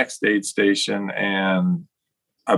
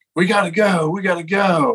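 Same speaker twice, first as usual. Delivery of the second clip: very high, very slow yell, long drawn-out "go"; 10 semitones higher than usual. Retelling how he yelled at you at the Port-a-John, retelling someone yelling. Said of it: "he's yelling at me like".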